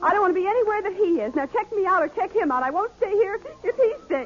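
weeping, tearful crying, pitched very high. Mary speaks to the people trying to calm her down, crying. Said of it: "please stop crying".

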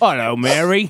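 put-on classic movie English accent. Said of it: "With that killer accent".

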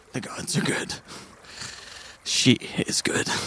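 whispered, half-voiced, breathy grumble under the breath. Voicing Scar after a prayer at the statue: muttering under his breath. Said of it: "Scar mutters under his breath".

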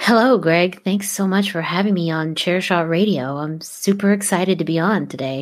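flat, low, very slow monotone radio voice. Greeting the host on a radio show in a soft, monotone NPR voice. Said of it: "that's kind of my NPR voice. Just something a little bit more monotone and softer".

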